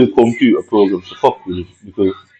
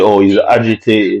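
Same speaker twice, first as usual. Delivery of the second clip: plain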